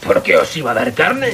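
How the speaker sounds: growled, snarling. The lion answers shouted demands from the darkness, growling. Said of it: "Gruñó el león en las tinieblas".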